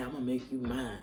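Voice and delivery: put-on deep voice. Retelling a voice heard during meditation: imitating a deep voice. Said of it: "this deep voice say".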